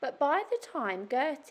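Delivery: ordinary delivery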